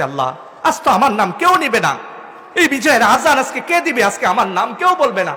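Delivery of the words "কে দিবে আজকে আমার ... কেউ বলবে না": ordinary talk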